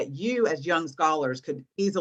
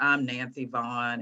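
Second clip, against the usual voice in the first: mock-nervous delivery, lower pitch; 3 semitones lower than usual. Giving presentation tips, she acts out her younger self: imitating younger nervous self. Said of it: "I was a little nervous".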